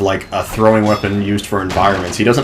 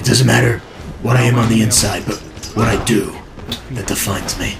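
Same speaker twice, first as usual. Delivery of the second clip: soft, hushed, whispered delivery. Comparing Bale voices, doing the one from Begins: hushed whispered Bale voice. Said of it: "much more hushed and whispered like this".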